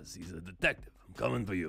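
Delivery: dropped way down, kept soft. Presenting cards, voicing the inspector card's character: terrible Jacob Hawken impression. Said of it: "Ignore that terrible impression".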